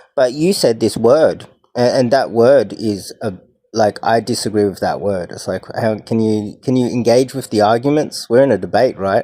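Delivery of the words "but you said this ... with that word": ordinary talk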